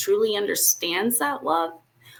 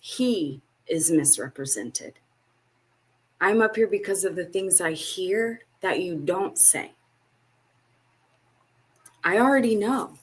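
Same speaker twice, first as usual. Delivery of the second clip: crying while speaking, tearful voice. Speaking to brothers and sisters about God being misunderstood, crying while speaking. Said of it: "I'm crying because I look around".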